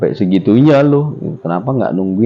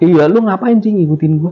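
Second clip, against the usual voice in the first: put-on, very high, heated, angry scolding tone; 12 semitones higher than usual. Retelling scolding a ghost tiger that followed: imitating own angry scolding. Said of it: "Gue marah-marah, gue bilang".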